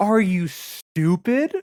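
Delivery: plain condescending tone. Describing a character's line delivery, in a mock-condescending read. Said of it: "It's a like".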